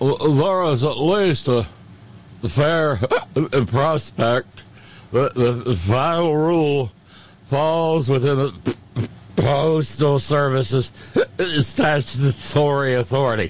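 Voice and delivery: silly, mock-drunk, fake drunken voice. Reading a quote aloud from a concurrence, in a silly put-on drunken voice. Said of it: "without the silly drunken voice".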